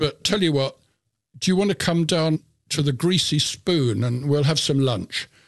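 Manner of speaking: ordinary delivery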